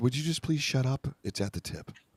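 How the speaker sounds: very polite, overly courteous tone. Retelling how the other speaker politely asked someone to stop talking: imitating a very polite request. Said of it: "He was very polite. He was like".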